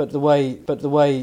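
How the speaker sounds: shouting, loud and carrying, pushed out.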